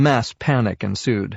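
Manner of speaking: plain reading voice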